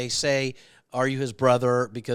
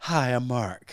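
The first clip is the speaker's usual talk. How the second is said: fake, performative, modest, humble tone. Retelling how someone busted him for being inauthentic, with a mock fake-humble greeting. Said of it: "busted me immediately on being inauthentic".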